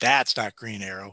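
blunt, outspoken, flat-out contradicting tone. Retelling a child's remark at a comic show: imitating someone saying it very loudly. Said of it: "she very loudly".

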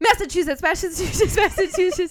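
fast, high, loud rattled-off repeated words.

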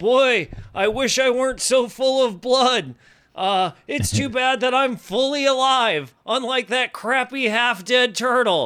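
shrill, very high, jeering yell. In a tabletop game, Diren steps in front of the fire and taunts: Diren yelling a taunt. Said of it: "he yells out".

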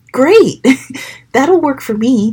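said with a big smile. Narrator reading Shiloh accepting a lunch invitation, smiling. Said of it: "Shiloh said with a big smile".

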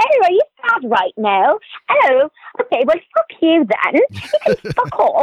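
put-on overly polite, sweet, sing-song British accent. Describing British people to listeners, mimicking them, mock-polite British accent. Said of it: "so polite in their British accents. They're like".

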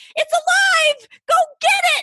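mock shriek, very high, slow and drawn out. Retelling finding a mouse in the sink and telling someone to get it, retelling own scream. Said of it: "And I'm like screaming".

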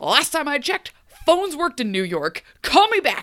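loud, high angry shout with swooping pitch. Retelling a scene of Hook yelling into his phone: imitating Hook yelling. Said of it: "yelling into his phone".

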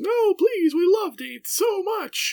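very high, loud, mock wail of distress. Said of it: "I hear your cries of distress".

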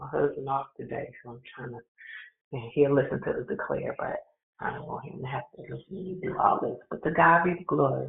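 low, hushed whisper kept under the breath. Leading a morning group call while her husband is home, whispering. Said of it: "I got to whisper".

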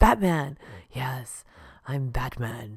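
weird sexy, deep, loud, low-toned put-on voice. Speaker jokes about how their voice sounds on the recording, low-toned Batman voice. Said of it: "I've got that weird low tone thing working for me".

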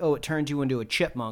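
plain

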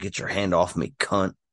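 put-on demonic voice. Retelling a scene with two nuns, voicing Kat: Kat's demonic voice. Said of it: "Kat goes demonic in her tone of voice".

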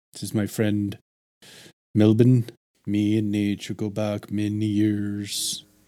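low, deep character voice with stretched-out words. Asked to try a lower voice for a character, speak in a lower voice. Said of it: "can you do a lower?".

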